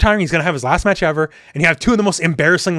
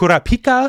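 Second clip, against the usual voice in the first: Kurapika, stress on third syllable pi; 7 semitones higher than usual. Discussing how others pronounce kurapika: stress on pi in kurapika. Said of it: "like highlighting the I".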